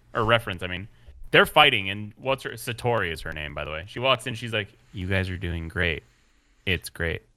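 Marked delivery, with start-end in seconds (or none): 4.9-7.1 put-on deadpan, flat, low, zero feeling. Recapping a show's fight scene for others, imitating Satori's emotionless voice. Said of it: "She walks in like with no emotion".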